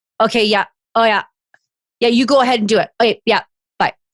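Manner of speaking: put-on curt, short tone. Retelling a coworker's phone reply to a question about a project: imitating a short tone. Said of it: "His tone was short".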